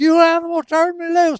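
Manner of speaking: mock screamed, very high-pitched. Retelling how she reacted when pulled from her chair: imitating a girl screaming. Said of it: "she's screaming".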